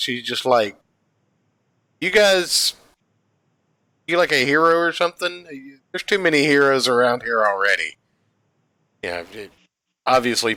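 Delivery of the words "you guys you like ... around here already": mock casual, nonchalant, offhand delivery. Retelling a comic scene, voicing the rescued girl: imitating a nonchalant girl. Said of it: "the girl's just kinda, like, nonchalant about it".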